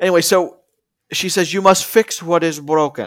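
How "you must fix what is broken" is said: weird put-on Russian accent. Quoting the magic woman who drives the van: weird russian accent. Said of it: "in weird, whatever, Russian dialect".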